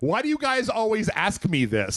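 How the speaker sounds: put-on snarky voice. Retelling how Ryan Cohen answered questions about his plan: imitating Ryan Cohen being snarky. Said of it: "got real snarky about it".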